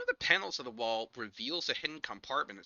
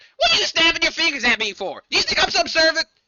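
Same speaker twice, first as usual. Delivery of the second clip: put-on very high, very loud old woman hollering; 15 dB louder than usual. Narrating a scene where a door opens above, old lady yelling. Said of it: "some old lady yelling".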